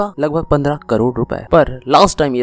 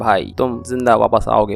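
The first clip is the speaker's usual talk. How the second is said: ordinary delivery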